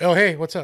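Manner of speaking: hurried, very loud, high-pitched. Retelling a first meeting at a stadium: imitating Bobby's quick reply. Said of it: "really quick".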